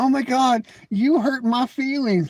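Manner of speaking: taunting, high, mocking put-on little-girl voice. Mocking how a guy keeps responding to him, in a mocking little-girl voice. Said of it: "You keep responding like a little girl".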